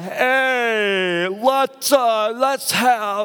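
put-on high slurring drunk voice. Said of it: "that's my best drunk voice".

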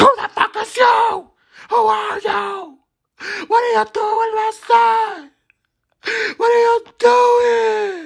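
shrill, very high, drawn-out yell. Retelling when a man left the dressing room with him, imitating mom yelling. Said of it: "my mom starts yelling".

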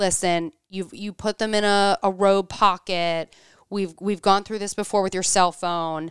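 ordinary talk, nothing marked

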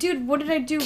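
put-on sobbing, bewildered, bawling, tearful kid voice. Retelling what a crying nine-year-old said: imitating a crying kid. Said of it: "He's bawling".

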